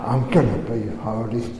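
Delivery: low, soft words forced out through clenched teeth. Speaker recalling deciding to be holy: acting out speaking through gritted teeth. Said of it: "you were going to do it through gritted teeth".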